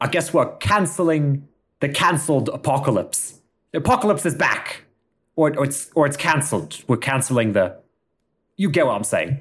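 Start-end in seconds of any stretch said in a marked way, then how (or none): 0.0-7.8 grand, announcer-style voice-over delivery. Voicing an announcer cancelling the apocalypse: Idris Elba's voice. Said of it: "Idris Elba's voice comes in and says".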